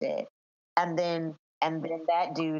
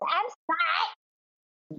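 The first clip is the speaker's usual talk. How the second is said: swooping, very high-pitched put-on voice; 12 semitones higher than usual. Mocking a man insisting he's not a dullard, in a Fredo voice. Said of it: "Here he comes with the Fredo voice".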